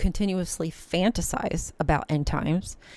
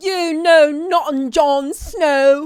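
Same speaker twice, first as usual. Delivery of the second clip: shrill and loud, "Snow" dragged out; 9 semitones higher, 11 dB louder than usual. Talking about Game of Thrones, the speaker tries a terrible Game of Thrones impression. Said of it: "that was a terrible impression".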